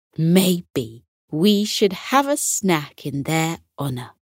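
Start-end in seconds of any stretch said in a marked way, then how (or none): none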